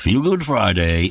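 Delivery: semi put-on American accent. The host announces Feel Good Friday, in a semi pseudo American accent. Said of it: "I put that semi pseudo American accent on".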